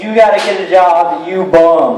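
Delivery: ordinary talk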